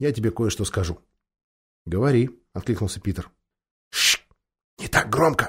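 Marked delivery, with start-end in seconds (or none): 3.9-5.5 slow, hushed, whispered shushing. Hushing a companion so as not to scare the girls: whispering. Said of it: "прошептал Эдмунд".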